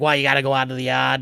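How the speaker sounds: Boston accent impression. Retelling what a Boston waiter told them, imitating a Boston accent. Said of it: "he like turned it on".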